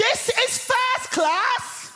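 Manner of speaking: mock high shout. Retelling a woman in the first class carriage who sees them: retelling a woman's shout. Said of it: "at the top of her voice, she shouts".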